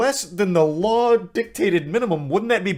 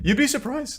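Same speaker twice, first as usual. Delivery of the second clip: sharp, high voice breaking hard mid-line; 6 semitones higher, 3 dB quieter than usual. Replying to a comment about asking someone about the law, with a hard voice crack. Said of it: "That was a hard voice crack".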